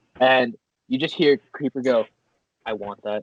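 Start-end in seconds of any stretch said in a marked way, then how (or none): 2.7-3.2 real quiet, soft, hushed half-whisper. Retelling a scene, imitating a character's quiet half-whisper: imitating Creeper's quiet half-whisper. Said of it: "He just kinda whispers it real, real quiet".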